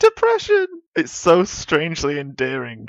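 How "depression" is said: mock cheerful tone, higher and louder. Joking about saying a sad word: saying a sad word in a put-on happy voice. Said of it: "It's like me going".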